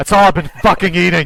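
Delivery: loud, hostile, aggressive snapping outburst. Voicing a stranded man refusing a finger sandwich: aggressive outburst. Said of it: "You have to be so aggressive about it".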